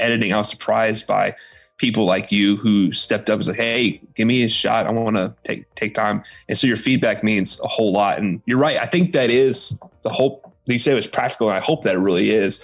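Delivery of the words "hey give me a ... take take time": normal talking voice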